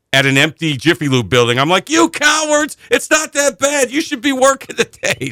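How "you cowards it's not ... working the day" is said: mock shrill, very high screaming rant. Retelling being alone in the car at a closed shop, reenacting own screaming. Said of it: "screaming by myself in the car".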